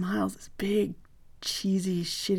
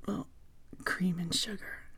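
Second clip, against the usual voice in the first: put-on sexy, sultry voice, much quieter; 8 dB quieter than usual. Retelling answering a coffee question, in a mock-sexy voice. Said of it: "In the sexiest voice I could muster".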